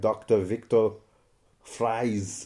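put-on Austrian accent. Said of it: "Like Arnie would say it".

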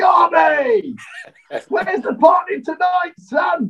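play-acted very high hollered shout. Retelling what Vinny Jones shouted down the corridor, retelling Vinny Jones shouting. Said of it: "He shouts down".

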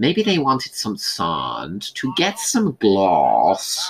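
put-on slow, slipping American accent. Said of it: "accent slips".

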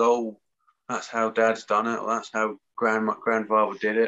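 normal talking voice

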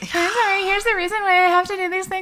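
mock, very high, sheepish, awkward, apologetic over-explaining. Retelling explaining formula feeding at postpartum yoga class, imitating own awkward apologetic way. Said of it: "in my, like, awkward apologetic way".

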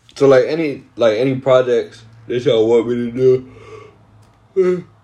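slow, high speech through a yawn. Hosting a morning music podcast, talking to listeners: yawning. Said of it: "I keep yawning too".

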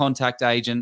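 ordinary talk, nothing marked

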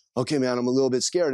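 ordinary delivery

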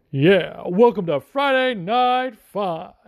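put-on sloppy, stoned announcer voice. Describing the guy who announces the fights and acting out his welcome, a bad imitation of a fight announcer. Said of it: "That's probably was a bad imitation".

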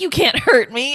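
ordinary talk, nothing marked

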